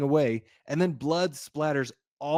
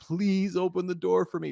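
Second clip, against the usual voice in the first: put-on high, tearful, sobbing, crying voice; 5 semitones higher than usual. Describing a movie trailer, acting out a man pleading: imitating crying plea.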